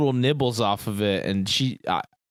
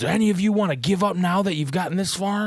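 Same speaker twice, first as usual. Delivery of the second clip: full-on, pitched-up, taunting anime villain voice; 8 semitones higher than usual. Retelling a game contestant grabbing another player: imitating an anime villain. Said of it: "he goes full anime villain".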